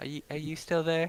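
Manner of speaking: high, hushed, barely breathed half-whisper. Holding a chest in the hand, asking whether someone is still there: half-whispering. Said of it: "just whisper".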